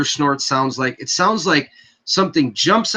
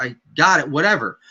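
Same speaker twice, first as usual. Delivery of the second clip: plain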